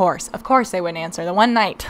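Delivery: ordinary delivery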